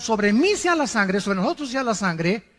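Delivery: normal talking voice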